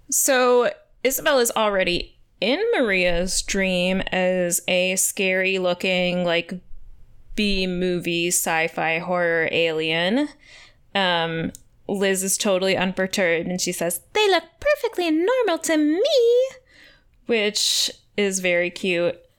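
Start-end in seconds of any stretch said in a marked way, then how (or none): 14.1-16.5 put-on very high, prissy, girly squeaking voice. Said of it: "she has this high-pitched voice and she's super prissy".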